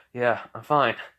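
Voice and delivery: ordinary talk, nothing marked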